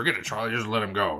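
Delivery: dumb, taunting voice, echoed back. Retelling how a twerp repeats a line to taunt: imitating Johnny's dumb taunting voice. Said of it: "does his dumb voice and everything".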